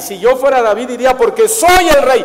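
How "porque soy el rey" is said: loud, brazen, shameless, grotesque cynical tone. Speaking ironically about David's wrongdoing, answering as David in a mock-cynical, brazen voice. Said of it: "así en un tono cínico, descarado, grotesco".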